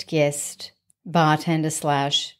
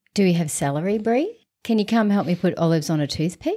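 put-on whispering; 3 semitones higher than usual. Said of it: "And she's kind of whispering it".

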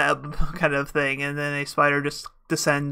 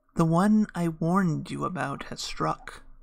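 hushed, whispered spider voice; 2 semitones higher, 4 dB quieter than usual. Voicing a spider that speaks to a player in a dream, whispering spider voice. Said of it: "The spider whispers to you".

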